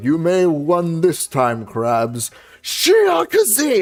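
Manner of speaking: very slow cartoon voice with big swooping pitch swings. Explaining a quote from an early SpongeBob episode: Plankton voice. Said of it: "Plankton goes".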